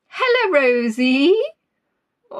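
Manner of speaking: bleating, baa-like sheep voice. Greeting listeners by name on Valentine's Day, in a sheep impersonation. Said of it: "I think I was doing an impersonation of a sheep there".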